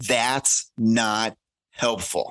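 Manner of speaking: very slow, pointed, deliberate delivery.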